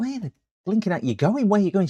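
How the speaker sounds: play-acted shrill, frantic, very high calling out. Retelling calling after someone lost outside the house, retelling a shout. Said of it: "I'm shouting".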